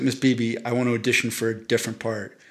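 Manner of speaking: ordinary talk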